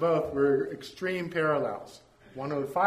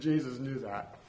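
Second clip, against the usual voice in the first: ordinary talk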